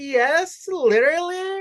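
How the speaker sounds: put-on very high-pitched, squeaky Valley Girl voice. Acting out how a stereotypical chatty character would answer an offer of food, to prove a point. Imitating a Valley Girl. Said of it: "Versus a possibly Valley Girl".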